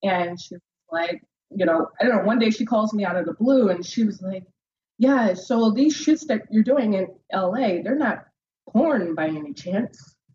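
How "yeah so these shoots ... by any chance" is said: put-on aunt voice.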